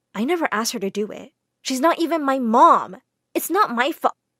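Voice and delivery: ordinary talk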